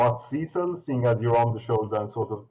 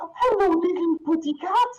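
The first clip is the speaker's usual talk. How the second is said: put-on cooing baby talk, higher. Voicing a large lady who spots a cat behind the player: large lady cooing at a cat. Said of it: "the large lady reaching out".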